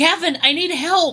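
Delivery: very high, slow, squeaky chipmunk voice. Pressing close to the microphone, asking the man on the phone for help: sounds like a chipmunk. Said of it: "You sound like a chipmunk".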